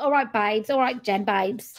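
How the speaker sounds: put-on London accent. Recalling seeing the Essex sign while traveling, doing Tracy's London accent. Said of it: "That's a real London accent".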